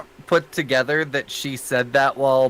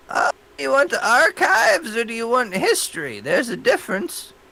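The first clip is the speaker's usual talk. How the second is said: put-on very high elderly woman voice; 10 semitones higher than usual. A character answers visitors asking for local history, in an old lady voice. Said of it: "Great old lady voice for one".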